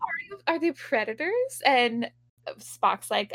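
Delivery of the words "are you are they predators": put-on, high, eager, thrilled and excited. Retelling a Star Trek scene, imitating an excited character. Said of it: "very excited".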